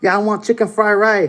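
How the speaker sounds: put-on high Chinese accent. Ordering food after a chinese lady offers help, copying her: imitated chinese accent. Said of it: "I started talking with the same Chinese accent".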